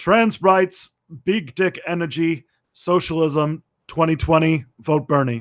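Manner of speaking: put-on Brooklyn accent.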